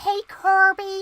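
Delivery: poor squeaky puppet voice, very high and loud. Talking to chat, trying Muppet voices, doing a bad Kermit the Frog impression. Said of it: "This is just poor Muppets impressions".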